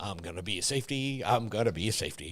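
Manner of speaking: very soft, low, muttered mumble.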